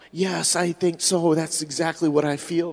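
put-on little whisper. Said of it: "This little bitty whisper".

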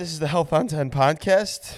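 voice cracking up high partway through. Podcast host welcoming listeners to the show, voice crack. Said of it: "a little voice crack there".

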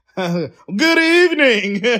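news anchor delivery. Joking with the group that a guest sounds like a news reporter, in Coco's news reporter voice. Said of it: "she definitely sound like a news reporter".

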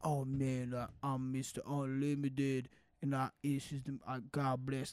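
slow, wandering, spaced-out rambling voice. Retelling a selfie video after a contract signing: imitating Russell Wilson on ketamine. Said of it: "talking like he was on ketamine".

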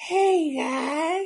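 pitched way up, creepy and sweet. Comparing a creepy co-host to the old neighbor from Family Guy: old neighbor from Family Guy voice. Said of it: "He reminds me of the old neighbor from Family Guy".

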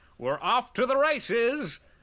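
high, drawn-out play-by-play sports commentator voice. Doing a little bit of sports commentary: sports commentator voice. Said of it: "I'm going to do a little bit of sports commentary here".

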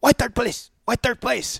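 indignant griping, very high-pitched and rough. Retelling what a third-place finisher said when handed his trophy, imitating an angry man. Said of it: "He's all mad".

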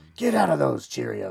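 very loud, rough growl. Quoting a YouTube dad who scares his kids: Bat Dad Batman voice. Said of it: "his voice reminds me of that".

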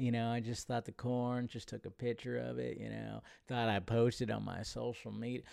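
goofy, dumb put-on movie-star voice. Reading a post about corn aloud: dumb Matthew McConaughey impression. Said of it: "my dumb, uh, Matthew McConaughey impression".

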